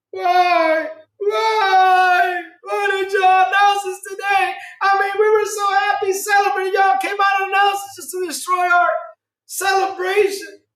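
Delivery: very high mock wailing, why stretched. Reacting to the VP's gaming announcement, mock crying. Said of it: "I gotta I gotta get my tears".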